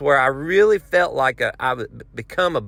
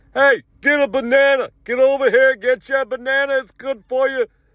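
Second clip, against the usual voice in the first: mock very high, pushy, insistent hollering; 9 semitones higher, 3 dB louder than usual. Retelling a banana vendor calling to the line: imitating a man yelling. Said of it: "he's yelling at me".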